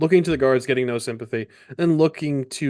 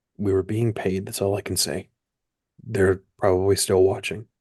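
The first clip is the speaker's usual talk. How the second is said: hushed whisper; 5 semitones lower than usual. A captive held by a guard answers his questioner while looking down, whispering. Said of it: "looks down and whispers and says".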